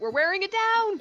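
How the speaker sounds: loud high yelling. As she arcs by in the air, a character calls out, shouting. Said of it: "she's just gonna shout".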